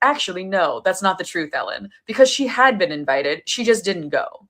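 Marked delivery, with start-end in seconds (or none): none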